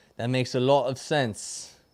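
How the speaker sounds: attempted English accent. Agreeing with advice just given, answering in a put-on English accent. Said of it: "Is that your Australian accent?".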